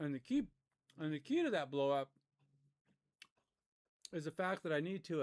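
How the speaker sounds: talking with a mouthful of food, muffled. Explaining a problem while eating popcorn: talking with a mouthful. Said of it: "now I'm talking with a mouthful".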